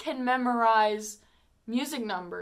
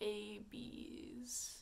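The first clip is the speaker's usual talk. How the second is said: put-on very slow speech, quieter; 22 dB quieter than usual. Retelling a movie scene, imitating an actress who talks very slowly. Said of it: "She talks like this".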